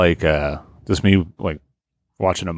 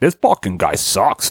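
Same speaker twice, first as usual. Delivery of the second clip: taunting voice. Showing the voice the group uses to make fun of people: mocking voice. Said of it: "a common voice we use to make fun of people".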